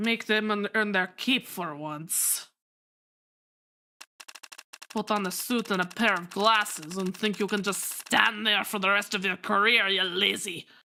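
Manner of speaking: lousy, bad, fake put-on Russian accent. Voicing a Japanese character with a shitty Russian accent. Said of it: "my shitty Russian accent".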